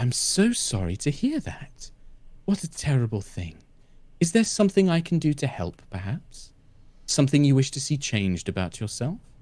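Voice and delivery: very soft, hushed, soft-spoken voice. Voicing a talking book replying to someone who feels unwell, very soft voice. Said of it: "this very soft voice".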